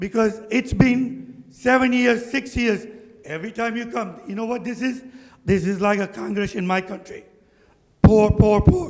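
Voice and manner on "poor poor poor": plaintive, whining, complaining repeated cry. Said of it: "That's all they cried".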